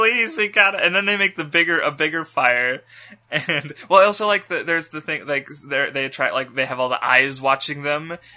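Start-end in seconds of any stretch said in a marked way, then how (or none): 0.0-0.8 put-on begging, higher and louder. Retelling campers pleading with a woman for a campfire, mock begging. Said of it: "they're like begging her".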